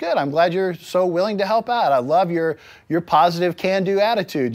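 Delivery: ironic, sarcastic, backhanded praising tone. Retelling his sarcastic reply to his children: imitating own sarcastic reply. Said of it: "I'll say something sarcastic back".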